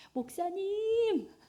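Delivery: high, slow, sugary sweet voice.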